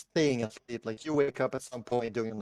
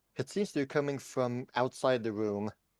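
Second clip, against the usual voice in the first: usual speaking voice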